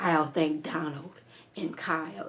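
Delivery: acted threatening tone. Retelling how she thanked two men: imitating a menacing thanks. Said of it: "And she said it like, "I'm gonna get them"".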